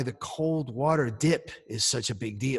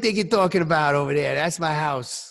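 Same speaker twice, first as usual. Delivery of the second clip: put-on New York accent, higher pitch; 2 semitones higher, 4 dB louder than usual. Mocking a friend's remark about New York: New York accent. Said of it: "watch it with the accent".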